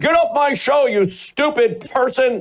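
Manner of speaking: hysterical, high-pitched scream. Retelling how a radio host screamed at callers: imitating someone screaming. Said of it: "screaming like he was having a hysterectomy".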